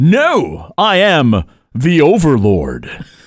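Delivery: mock regal, grandiose, high, swooping majestic delivery. Retelling the middle child hollering out from over by the sink, a mock-majestic holler. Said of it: "hollers out in his most majestic voice".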